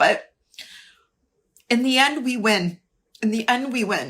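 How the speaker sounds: emotional, teary, moved, tearful voice. A speaker apologizing for getting emotional while urging listeners to hold the line. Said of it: "I'm sorry I'm getting emotional".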